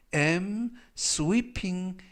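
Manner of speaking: very slow, careful model reading with am sweeping drawn out. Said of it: "이때 sweep 하면".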